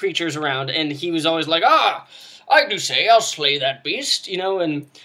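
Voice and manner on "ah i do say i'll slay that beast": put-on loud, high-pitched dwarf voice with British accent. Recalling a fellow player's dwarven ranger, doing Finn's British dwarf voice. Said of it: "a British safari safari gear clad British dwarf".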